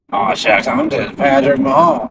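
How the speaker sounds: exaggerated, hammy comic voice with big swooping pitch swings. Doing a comic take on a quarterback: comic Patrick Mahomes voice. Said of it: "if I do it more comically, it's just funny. Like".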